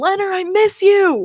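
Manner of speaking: mock, high-pitched screaming. Retelling calling to a player coming off the ice during warm-ups: imitating own scream. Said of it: "and I just screamed".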